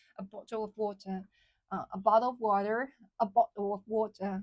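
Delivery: British accent, water with no T, bottle Ts swallowed. Speaker showing how British people say a phrase, British accent swallowing the T. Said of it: "they just like swallow all the T sound".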